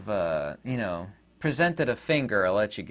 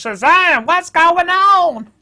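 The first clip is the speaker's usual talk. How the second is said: shrill, booming, high hollering voice in a drawl; 14 dB louder than usual. Speaker announces a voice mid-rant about people: Gomer Pyle accent. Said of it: "I'm going to do my Gomer Pyle accent here".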